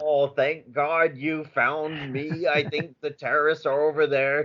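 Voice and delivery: fake, put-on American accent. Recalling a Die Hard scene while discussing accents, quoting: Hans Gruber's fake American accent. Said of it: "Hans Gruber is pretending to be American".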